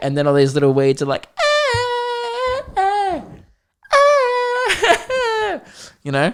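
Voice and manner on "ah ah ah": loud, high-pitched screaming. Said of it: "screaming 'cause they're being poisoned".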